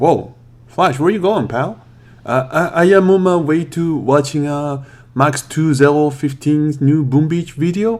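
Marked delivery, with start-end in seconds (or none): 2.2-8.0 put-on French accent with a stumbling start. Flash answers when asked where he's going, in a fake french accent. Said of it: "why are you talking with that fake French accent?".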